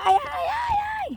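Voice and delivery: mock very high, loud, drawn-out wail.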